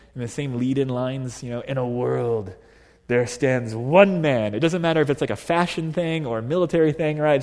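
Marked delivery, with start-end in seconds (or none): 1.6-4.5 deep, slow, intoning movie-trailer announcer voice. Speaker describes how every movie seems to start, in the movie trailer voice. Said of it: "the same movie trailer voice".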